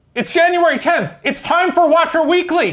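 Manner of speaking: alarmed, urgent voice. Recording a show intro on request: urgent, like there's a fire. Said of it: "Say it as if like you're saying there's a fire".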